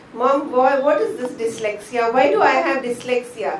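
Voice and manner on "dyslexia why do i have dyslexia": ordinary talk, nothing marked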